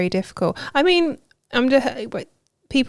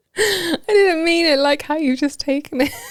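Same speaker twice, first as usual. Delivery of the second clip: high voice, words spilling through laughter; 6 semitones higher than usual. After a joke about a short partner, the speaker insists it was innocent: laughing while talking. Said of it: "listen to how you're laughing".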